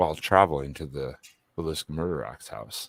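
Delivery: deep narrator voice. Doing a travel video voiceover the usual way: deep voice. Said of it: "I just go like fucking deep voice".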